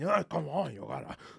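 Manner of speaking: aggressive, rough, pushy coaxing voice. Imitating a pushy salsa instructor grabbing someone by the hips. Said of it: "aggressive sexual Spanish dudes just grabbing me".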